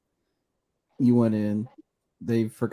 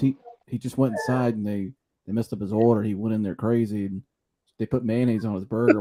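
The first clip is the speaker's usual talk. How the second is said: plain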